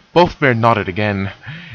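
plain reading voice

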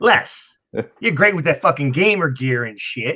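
put-on Chicago accent. Doing a Mickey Schuch impression, teasing Les about gamer gear: Mickey Schuch impression, Chicago accent. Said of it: "I'm gonna do a Mickey Such".

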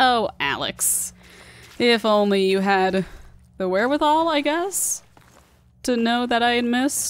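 high, slow, mock-sarcastic robotic drawl.

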